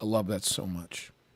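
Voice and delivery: plain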